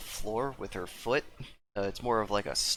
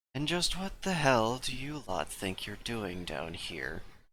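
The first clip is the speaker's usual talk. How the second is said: put-on formal woman's voice. A game master voices a woman addressing the players, in her put-on character voice. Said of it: "now I have to do voices".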